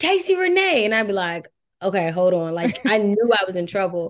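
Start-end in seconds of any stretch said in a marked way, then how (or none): 0.0-0.8 put-on high-pitched Jersey accent, calling out. Act out your late aunt calling you when you got in trouble, in her jersey accent. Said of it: "in her Jersey accent".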